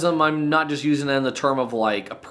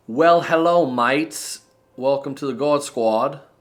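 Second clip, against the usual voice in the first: terrible, put-on Australian accent. Host opens the episode intro in a terrible australian accent. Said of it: "a terrible attempt in Australian accent intro".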